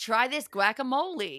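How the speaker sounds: very bad, fake, put-on American accent. Acting out what he'd say about a dip, in a bad American accent. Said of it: "That was the worst American accent ever".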